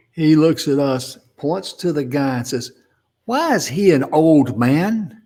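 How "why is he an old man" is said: mock carrying voice, loud and drawn-out. Retelling how he suddenly pointed at a guy and asked, loud question. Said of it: "in his usual loud voice".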